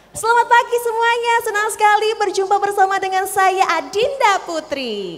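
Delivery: informal emcee voice, very high. Demonstrating the high pitch used when hosting an informal event, high-pitched mc voice. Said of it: "Itu pitch yang untuk nada tinggi".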